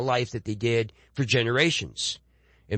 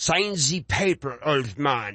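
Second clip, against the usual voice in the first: slow, put-on German accent; 2 semitones higher than usual. Showing how dialogue written in an accent is read: German-like accent. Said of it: "supposed to be some kind of, uh, German or something".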